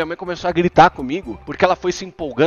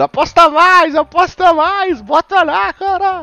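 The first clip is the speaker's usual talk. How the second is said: put-on very high, drawn-out urging shout; 13 semitones higher, 5 dB louder than usual. Speaker retelling what their mother yelled while the father was betting: retelling mom's yelling. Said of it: "minha mãe tava gritando".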